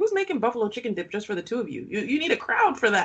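plain

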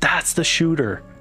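big, powerful voice. Retelling how Derek leans forward on the bench: imitating Derek's huge, powerful voice. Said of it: "He has this like huge, powerful voice".

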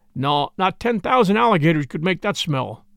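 ordinary delivery

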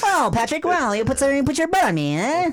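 very high cartoon voice. Answering another speaker who compares the sound to a cartoon: SpongeBob voice. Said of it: "like SpongeBob?".

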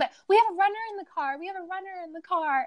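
high-pitched, imploring, insistent, pleading voice. Retelling how a friend begged a police officer to let them through: imitating a friend pleading.

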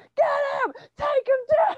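acted, shrill, very high, loud screaming. Retelling the girlfriend cheering during a wrestling match: imitating someone screaming. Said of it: "Screaming at me".

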